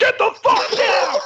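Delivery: put-on very high, very slow, drawn-out aggressive bark. Acting out an imagined Disney SWAT team storming in: mock aggressive shout. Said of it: "But they're really aggressive".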